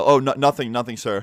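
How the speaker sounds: ordinary talk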